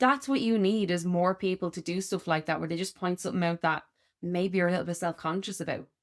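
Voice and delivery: ordinary talk, nothing marked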